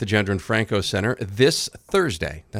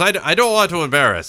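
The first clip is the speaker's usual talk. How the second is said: put-on Russian accent, much higher, louder; 8 semitones higher, 6 dB louder than usual. Retelling what a man said as he was leaving, russian accent. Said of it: "Russian accent".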